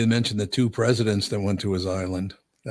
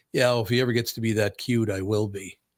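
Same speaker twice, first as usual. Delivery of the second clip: plain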